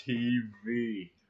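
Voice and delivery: put-on slow, drawn-out "tv". Mimicking how he says the word TV: saying TV slow, drawn out. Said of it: "He says it slow".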